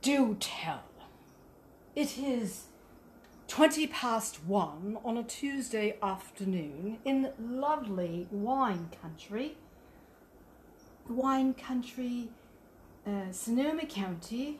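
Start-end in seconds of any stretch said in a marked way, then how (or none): 0.0-9.6 practiced, put-on British accent. Speaker trying out an accent for Andrea, a Brit, to judge: practiced British accent. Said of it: "whether or not you think I've got it".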